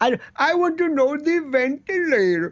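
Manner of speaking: put-on lilting Swedish accent. Mocking a man's accent as an actor doing Mario Cuomo, in a lilting, Swedish-sounding Mario Cuomo voice. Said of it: "It's Swedish. It's lilting".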